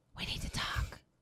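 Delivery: whispering voice. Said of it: "you hear a whisper".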